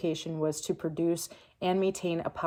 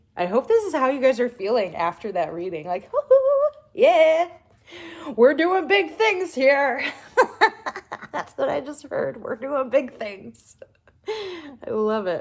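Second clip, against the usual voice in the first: loud, high, giddy gush; 9 semitones higher, 9 dB louder than usual. Giving a closing message after a reading: giddy, childish energy. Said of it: "so I'm getting really giddy".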